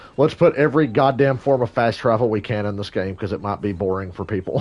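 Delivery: plain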